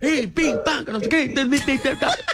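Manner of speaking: high-pitched, mock, loud ranting delivery. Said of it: "se hubiesen puesto a vociferar".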